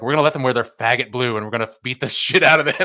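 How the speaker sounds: put-on furious, pissed-off coach voice. Retelling a meeting he called with all of them, imitating him pissed off. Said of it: "you could tell he's so pissed off".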